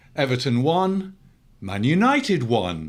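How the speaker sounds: pools-results announcer reading cadence. Imitating a football results announcer reading a draw: imitating a results announcer reading a draw. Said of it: "if it was a draw".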